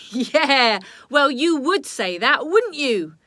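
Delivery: very loud, jeering, scornful sneering voice. Robbie answers Darkus, who says the papers are lying; sneering. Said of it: "Robbie sneered".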